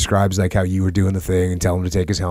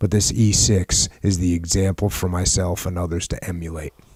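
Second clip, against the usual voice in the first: plain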